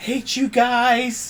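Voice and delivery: raspy, very high voice, "guys" drawn out. A player's character speaks as its first action after climbing to its feet, raspy Cartman voice. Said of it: "in a raspy Cartman voice".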